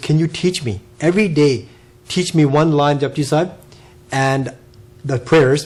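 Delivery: ordinary delivery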